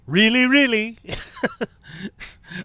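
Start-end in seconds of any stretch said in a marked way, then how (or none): 0.1-0.9 put-on loud, higher-pitched Scottish accent. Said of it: "I kinda muffed the Scottish accent on that".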